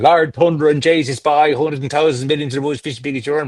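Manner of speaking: Irish-influenced Newfoundland way of talking. Explaining Canadian regional accents, showing how Newfoundland speaks: Newfoundland accent. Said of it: "Speak like that".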